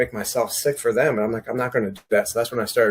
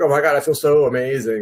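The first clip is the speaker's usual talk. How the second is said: mock annoying, obnoxiously gushing, zealous raving enthusiasm; 4 semitones higher, 4 dB louder than usual. Act out the people at a school that goes gluten free in a funny episode, mock-obnoxious. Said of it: "they're just totally obnoxious".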